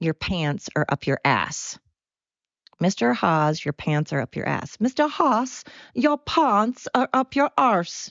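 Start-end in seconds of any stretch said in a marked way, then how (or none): 4.8-8.1 failed, bad put-on South African accent. Remembering a line from years ago, in a bad South African accent. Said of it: "I cannot do a South African accent".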